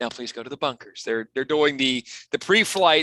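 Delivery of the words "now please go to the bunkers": soft, calm, even automated recorded-message voice. Retelling an alien's greeting as an automated response: imitating a calm automated response. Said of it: "the automated response".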